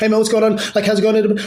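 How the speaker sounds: rapid, high-energy speech. Speaker demonstrating a conversation pace to the listener, fast hyped-up pace. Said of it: "I'm talking in this pace ... cocaine energy".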